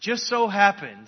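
heavy sarcasm. Retelling how the cynical captain ended up at the city gate: sarcastic. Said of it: "I'm saying that sarcastically".

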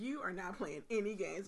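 ordinary delivery

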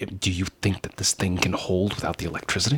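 speaking in a low whisper. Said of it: "and I whisper to him and I say".

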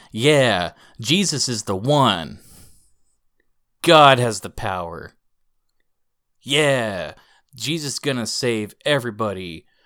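booming, full-voiced, very loud, slow proclaiming delivery. Telling of a man who walks over to the cashier, imitating a very loud voice. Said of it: "with a very loud voice".

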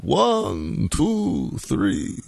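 high, creaky puppet-like vampire voice. Joking that Dracula brings to mind the Count from Sesame Street: the Count from Sesame Street voice. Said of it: "think of the Count from Sesame Street".

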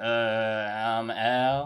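put-on lackadaisical manner. Imitating a friend's introduction to mock it: imitating a lackadaisical intro. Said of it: "are you just gonna go".

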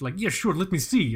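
fake Middle Eastern accent. Retelling asking a guy to size a bracelet, voicing him in a bad Middle Eastern accent. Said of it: "Russian is the best Middle Eastern accent you guys are going to get from me".

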